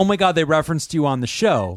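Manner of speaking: ordinary talk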